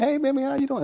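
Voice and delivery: high climbing voice. Showing how he talks to his wife, voice going up high. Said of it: "You see how my voice start going up like this?".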